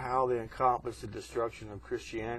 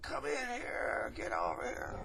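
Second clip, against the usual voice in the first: put-on breathy, hushed, irritated stage whisper; 14 semitones higher, 4 dB quieter than usual. Retelling calling his wife into the bathroom, retelling a yell. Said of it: "I'm yelling at her".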